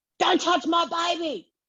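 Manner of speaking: play-acted very high, shrieking scream. Telling a story about a man patting a toddler in a pram, imitating a woman screaming. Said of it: "you hear one woman scream".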